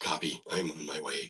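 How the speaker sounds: very low, very soft, rasping tough-agent voice. Getting into a game agent's voice to read its lines: cigar-smoker's voice. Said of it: "used to have to smoke a cigar to get that voice".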